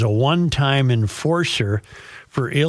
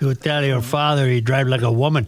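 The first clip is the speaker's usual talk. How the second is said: botched put-on, not-quite French accent. Imitating the cops who yelled at him for driving slowly: botched put-on accent of a cop in France. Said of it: "I don't even know what accent that was".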